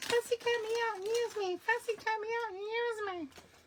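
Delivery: very high, loud, shrill screaming bug voice. Voicing the ladybug on the craft paper: put-on screaming ladybug voice. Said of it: "this ladybug is just screaming at me".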